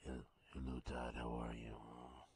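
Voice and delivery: low, fake, laid-on bedroom voice. Bringing back a bit to greet a co-host: put-on bedroom voice. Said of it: "Put some bass in your voice".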